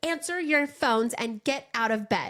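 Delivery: scary, stern parental mom voice. A mother retells ordering her kids out of bed, in her mom voice. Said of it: "In my mom voice".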